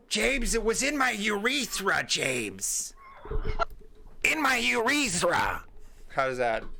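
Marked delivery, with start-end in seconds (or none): 0.1-5.6 high, very slow, high-energy voice. Doing an impersonation of Raquel when asked: impersonation of Raquel. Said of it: "Do you have an impersonation of Raquel".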